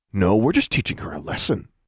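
ordinary delivery, nothing marked

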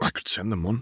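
muttered under the breath, half to oneself. Narrator reading a story, giving a character's line: muttered. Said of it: "Draco muttered".

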